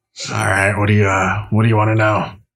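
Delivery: fierce, harsh, rasping voice. Voicing a midwife who greets the players: fierce rasping voice. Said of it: "a fierce, rasping voice".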